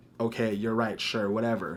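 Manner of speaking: ordinary delivery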